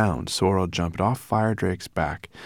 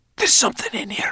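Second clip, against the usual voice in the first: hissed, pitched very high. Narrator reads Sorrel's line as she suddenly jumps up, hissed. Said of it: "she hissed".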